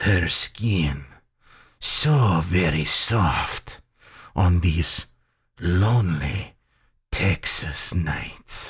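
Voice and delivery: low, slow, oily, sultry voice. A man speaks to another man about that man's wife: oily, sultry tone. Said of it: "into an oily and sultry tone".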